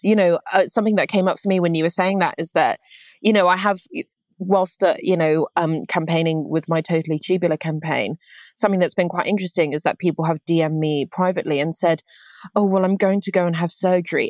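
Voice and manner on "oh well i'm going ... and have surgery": mock apologetic voice, really apologetic. Retelling messages from people about to have surgery: imitating a really apologetic tone. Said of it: "in this kind of really apologetic tone".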